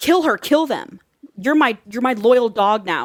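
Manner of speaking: acted-out scream. Retelling a story, the speaker acts out one character screaming at another; retelling a scream. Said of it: "Lola screams to Sonia".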